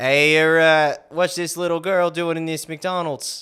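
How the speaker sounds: loud, rough, clumsy Boston accent, belted out. A speaker who keeps doing accents on the show tries a JFK-sounding accent. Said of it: "You sound like J F K".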